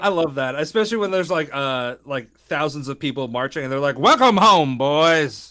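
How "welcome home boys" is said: loud, put-on old-fashioned, old-timey voice. Speaker mimicking the marching crowds' welcome, old-timey voice. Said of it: "I hate that voice".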